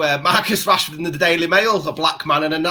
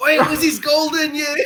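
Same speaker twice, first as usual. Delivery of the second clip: high, pretend screaming; 10 semitones higher than usual. Imagining the listener dragged out by studio execs, mock screaming. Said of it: "you're screaming".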